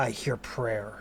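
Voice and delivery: low, slow male voice. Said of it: "the male voice".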